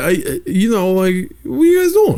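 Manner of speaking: put-on, very high, stammering New York accent. Retelling how they used to talk around friends: imitating own New York accent. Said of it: "I would just talk like that the whole day".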